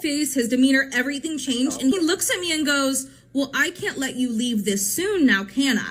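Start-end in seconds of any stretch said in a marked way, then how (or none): 3.3-5.9 put-on man's voice turning serious, threatening. Retelling what the date said after his demeanor changed: imitating a man turning serious. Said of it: "goes from being, like, a very lighthearted, nice guy to turning, like, so serious".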